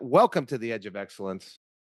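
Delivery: ordinary delivery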